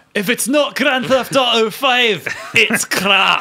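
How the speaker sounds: put-on high, loud, slow Scottish accent. Answering a request to voice a game boss: Scottish accent as Dan Houser. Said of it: "neglected your Scottish accent for Dan Hauser".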